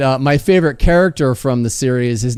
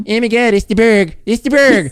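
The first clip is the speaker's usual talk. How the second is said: silly put-on cartoon cat voice, higher pitch; 9 semitones higher than usual. Showing the voice created for the catnip-high cat Nippens: Nippens voice. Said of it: "And so he's like".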